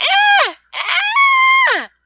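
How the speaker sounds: put-on shrill, swooping, very loud, drawn-out toddler wail. Showing on request how a baby screeches, imitating a baby's high-pitched wail. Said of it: "wail like she does".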